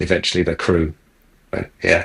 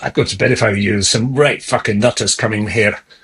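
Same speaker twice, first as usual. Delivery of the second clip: put-on broad Glasgow accent, pitched higher; 3 semitones higher than usual. Retelling a drunken Scotsman asking for narcotics: broad Glasgow accent. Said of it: "Broad Glasgow accent".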